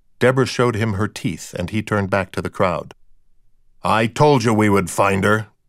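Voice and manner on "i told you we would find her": growling, macho, manly tough-guy growl. A man tells the crowd before the cameras, in a manly growl. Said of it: "told the crowd in a manly growl".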